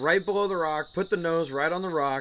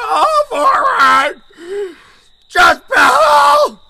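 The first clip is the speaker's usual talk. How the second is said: very loud, very high, cracking, breaking holler; 17 dB louder than usual. Describing her vocal cords giving out, retelling herself yelling paddling commands, voice cracking like a teen. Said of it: "I sound like a 14-year-old kid going through puberty".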